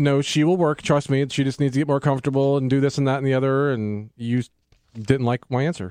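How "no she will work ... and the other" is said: normal talking voice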